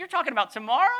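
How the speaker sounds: high, loud, incredulous tone.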